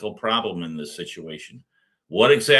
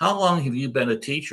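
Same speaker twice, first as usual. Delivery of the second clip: nice, courteous, friendly polite tone; 4 semitones higher than usual. Retelling a question they asked a teacher, retelling a nice polite tone. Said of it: "I used a nice tone of voice".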